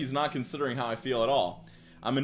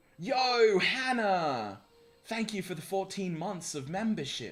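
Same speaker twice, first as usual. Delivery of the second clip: put-on British accent, pitched up; 6 semitones higher than usual. Livestreamer thanking a subscriber on stream, in a British accent. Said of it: "I love talking in a British accent".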